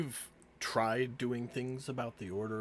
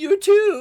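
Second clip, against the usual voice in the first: very high, loud, cracking voice; 18 dB louder than usual. Voicing a young guard answering a farewell: voice cracking. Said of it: "Voice cracking".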